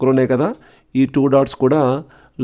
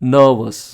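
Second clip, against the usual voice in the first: NER-vous, stress on first syllable. Teaching adjective word stress, saying nervous with stress on first syllable of nervous. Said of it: "first syllable మీద stress ఇస్తే".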